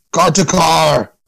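loud shouting. Voicing a character heard calling out to the group: loud call. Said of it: "Really loud".

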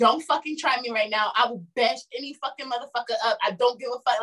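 put-on voice snapping angrily, angry outburst. Retelling a friend's angry outburst at a stranger: imitating someone snapping angrily. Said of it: "she was snapping".

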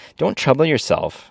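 cheery and easygoing. Jinjur answers the man who offers to go find powder for the gun, cheerful. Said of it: "said Jinjur cheerfully".

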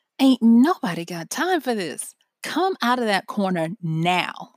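commanding, bossy put-on big-girl mama voice. Retelling talking to her little brother hiding in a corner, big girl mama voice. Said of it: "my big girl mama voice".

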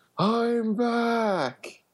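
very high-pitched voice. Reading a comic book line aloud as an imitation: Tobey Maguire impression. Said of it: "my "I'm back" is Tobey Maguire".

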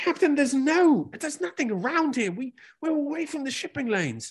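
frantic, panicked, very high-pitched voice. Narrating a ship chase, the navigator answers the captain, panicked. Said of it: "the navigators freaking out".

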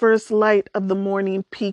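ordinary delivery, nothing marked

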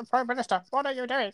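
mock monotone politician voice. Mocking a politician's rubbish voice: Keir Starmer impression. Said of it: "you do the impression of him".

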